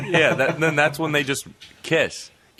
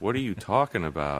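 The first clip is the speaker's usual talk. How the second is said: low, super serious voice. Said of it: "she got super serious and was like".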